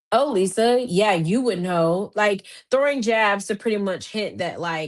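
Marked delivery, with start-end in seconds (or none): none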